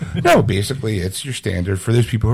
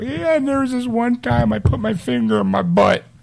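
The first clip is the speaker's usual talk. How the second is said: very high, goofy, unhinged loopy babble; 12 semitones higher than usual. Joking about how the speaker may sound later: mock loopy rambling. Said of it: "I might get a little loopy and kinda go".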